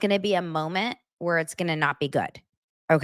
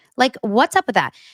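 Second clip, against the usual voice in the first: normal talking voice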